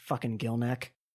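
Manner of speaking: muttered under breath. Game master voicing a character muttering as a player passes: muttered under her breath. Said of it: "Under her breath, you hear her say".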